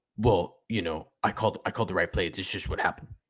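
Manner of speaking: heavily snarky, sarcastic delivery. Imagining asking the coach a question, then doing a Kyle impression. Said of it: "that's my Kyle impression".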